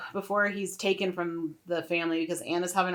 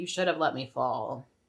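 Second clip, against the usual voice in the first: whisper at a lower pitch; 4 semitones lower than usual. Recounting a scene where Veovis whispers to another character, whispering as Veovis. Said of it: "Veovis like whispers to him like".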